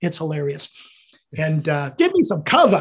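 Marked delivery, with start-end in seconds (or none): 1.4-2.8 put-on New Jersey accent, cover said without R. Retelling a medic running up to help the injured, in a New Jersey accent. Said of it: "he had this wonderful New Jersey accent".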